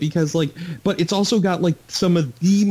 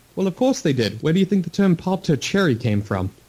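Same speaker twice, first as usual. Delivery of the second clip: ordinary talk, nothing marked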